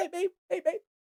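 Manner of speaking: very high, all squeaky voice. Acting out a boyfriend reacting after being checked: imitating a squeaky voice. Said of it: "voice get all squeaky".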